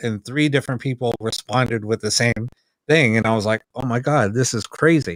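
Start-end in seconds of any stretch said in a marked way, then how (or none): none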